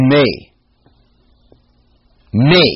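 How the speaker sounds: me stressed heavily both times. Reading a scripture passage aloud to listeners, stressing the word me. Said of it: "emphasizing the word me".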